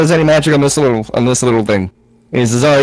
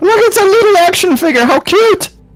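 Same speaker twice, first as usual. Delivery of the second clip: very high-pitched, put-on Irish brogue. In a game, picking up a small idol figure, in an irish accent. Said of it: "I feel like you're partially Irish".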